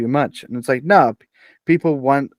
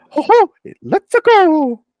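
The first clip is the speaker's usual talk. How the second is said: fake, very high, very slow, swooping sing-song voice; 7 dB louder than usual. Asking whether anyone wants to hear this for a whole film: bad Mario voice. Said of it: "I can't do the Mario voice".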